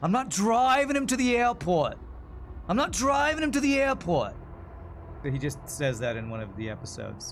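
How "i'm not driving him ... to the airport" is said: put-on New York accent, pitched very high. Quoting a line Jerry Seinfeld says in his show, Jerry Seinfeld New York accent. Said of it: "the line that always comes comes to my brain when I think of New York accent".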